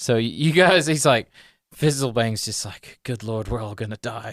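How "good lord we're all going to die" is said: muttered under breath, much quieter. A storyteller voicing a character's aside before he carries on, muttered under breath. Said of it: "like under his breath".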